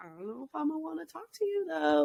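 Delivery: muttered under the breath. Retelling what a woman said as she turned away, imitating muttering under breath. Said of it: "under her breath is like".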